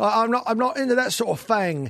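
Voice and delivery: London Cockney accent. Demonstrating how cockney speakers say a phrase, cockney accent. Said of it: "when they say it's a Cockney".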